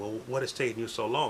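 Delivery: ordinary delivery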